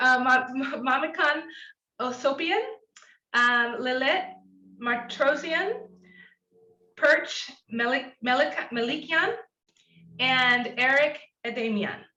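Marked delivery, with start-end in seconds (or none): 0.2-9.3 slow, nervous, hesitant speech with halting restarts. Introducing panel speakers by name: nervous stumbling over names. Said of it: "I'm getting nervous when I say names".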